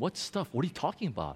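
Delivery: soft, low, puzzled voice.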